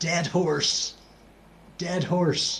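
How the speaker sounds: imitated whispering. Retelling a soldier calling out sights on a march: retelling a whisper. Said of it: "why on earth were you whispering".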